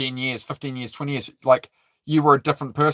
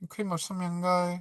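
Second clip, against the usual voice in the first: put-on Chinese accent, higher and quieter; 3 semitones higher, 11 dB quieter than usual. Speaker showing off the accents they can do, put-on chinese accent. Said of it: "sometimes I do the Chinese".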